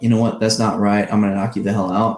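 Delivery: ordinary delivery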